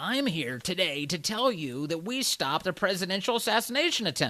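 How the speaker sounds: high announcer voice. Imagining an attorney general announcing a thwarted plot: Merrick Garland impersonation. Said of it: "my best Merrick Garland impersonation".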